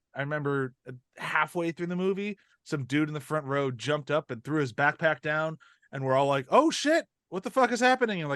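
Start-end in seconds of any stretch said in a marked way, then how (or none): 6.5-8.2 put-on startled, jittery, high-pitched alarm. Retelling the audience's reaction when a man jumped up in the theater: imitating a nervous reaction. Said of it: "getting all nervous".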